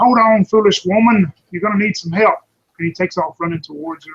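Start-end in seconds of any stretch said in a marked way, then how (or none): 0.0-2.3 very loud, full-voiced scream at lung top. Narrator voicing a character calling after a woman running toward a giant, screaming. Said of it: "he screams at her".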